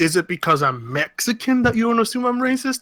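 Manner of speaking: playful, jokey tone. Retelling a first reply to a woman picking a fight, retelling a joking remark. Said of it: "But I said it jokingly".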